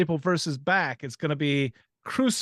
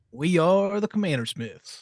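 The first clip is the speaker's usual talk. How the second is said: put-on old-timer voice from a Western; 3 semitones higher than usual. Welcoming listeners with the show's name, like an old dude from a Western. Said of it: "an old dude from a Western".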